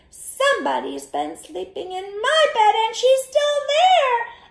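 tiny bear cub voice, very high and loud. The wee little bear finds someone in his bed, wee little bear voice. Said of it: "in his wee little voice said".

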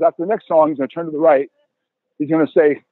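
usual speaking voice

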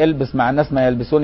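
ordinary delivery

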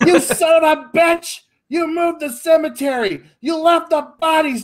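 loud scream.

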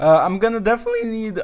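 voice cracking up high in mid-phrase. Planning a cow farm out loud, mid-sentence: voice cracks. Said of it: "that voice crack!".

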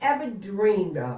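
ordinary delivery

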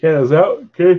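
talking while yawning. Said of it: "Sorry, I'm yawning".

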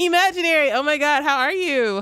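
put-on, mock excited, enthusiastic tone. Showing a regular chatter a more enthusiastic greeting: put-on enthusiastic greeting.

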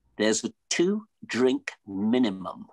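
put-on haughty, stuck-up, slow, snooty English accent. Retelling what a cocktail waitress told him at a club: snooty english accent. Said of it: "snooty English cocktail waitress".

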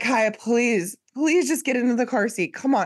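put-on, high, imploring, coaxing voice. Retelling coaxing a toddler into a car seat: imitating own pleading. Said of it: "she heard me pleading with Kaya".

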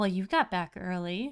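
hazy, smoky, ethereal, barely voiced tone. Narrating a guided scene, voicing the woman's line in a smoky, ethereal voice. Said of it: "her voice is very, it's very smoky".

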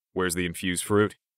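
ordinary delivery, nothing marked

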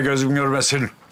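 plain reading voice

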